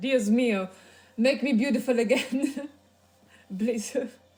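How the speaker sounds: loud, booming, botched fake Italian accent. Voicing an imagined figure in a bad fake Italian accent. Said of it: "I cannot fake an Italian accent for life".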